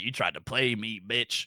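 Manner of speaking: mock irate, angry old lady's scolding voice. Retelling grandma catching a trick with a tiny switch: imitating an angry grandma. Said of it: "'cause she'd be like".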